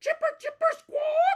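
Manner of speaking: very high, loud, screeching squirrel chatter. Reading a story aloud, a squirrel charges at the narrator: screeching squirrel. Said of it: "he screeches".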